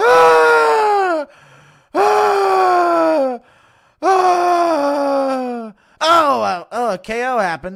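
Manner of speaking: loud, drawn-out moan-laugh. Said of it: "Impression of Rogan moan laughing".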